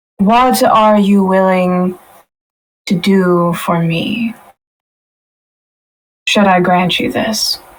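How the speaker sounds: disembodied, unseen female voice. Voicing an unseen woman in a shadow palace: female voice speaking from darkness. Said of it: "a female voice speak to you".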